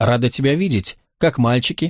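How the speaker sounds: ordinary delivery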